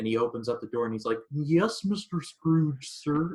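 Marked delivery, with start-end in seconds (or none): 1.3-3.3 high, very slow, poorly done frog puppet voice. Retelling a Scrooge scene, Cratchit answering Scrooge at the door: bad Kermit impression. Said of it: "And my bad Kermit impression".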